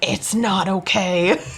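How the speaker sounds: put-on sinister, demon-like voice. Retelling answering a nurse during labor, in a demonic voice. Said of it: "with this like demonic voice and I was like".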